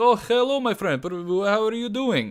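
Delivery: put-on generic Eastern European accent, pitched way up high. Retelling greeting a man who sat down, in a generic Eastern European accent. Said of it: "this very generic Eastern European accent".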